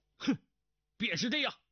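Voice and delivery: very high, testy, impatient barked shout. An impatient man swings his long sword with a flash, shouting impatiently. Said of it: "喝道".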